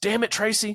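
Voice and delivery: mock very high-pitched, shrill yell. Summarizing a story where a boyfriend shouts as the phone rings, retelling a shout. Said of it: "he shouts".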